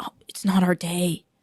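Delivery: acted hushed whisper. Acting out a dad who opens the door: imitating a dad whispering. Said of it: "That's why he's whispering".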